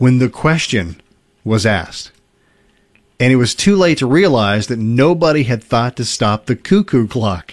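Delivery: ordinary talk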